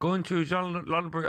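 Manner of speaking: failed, fumbled attempt at a Dutch accent. Retelling what a man said when he opened the car door, attempted Dutch accent. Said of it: "I'm trying to do Dutch accent".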